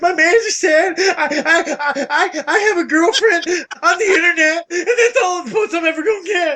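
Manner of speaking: fake sobbing. Acting out a fast food worker walking home from work: mock crying. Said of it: "walk home from work every day crying".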